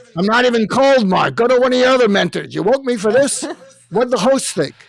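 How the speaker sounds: put-on Brooklyn accent, very loud, high and shrill. Retelling waking his late mentor, imitating Larry's Brooklyn accent. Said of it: "Larry has a Brooklyn accent".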